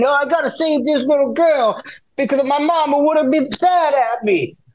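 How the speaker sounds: put-on Italian accent. Acting out another stock character in the same rundown of stereotypes, voicing his reasoning. Imitating Italian accent. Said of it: "There's a guy from Brooklyn".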